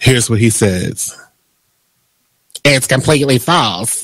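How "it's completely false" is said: low put-on voice, dismissive. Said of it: "That was my Madea voice".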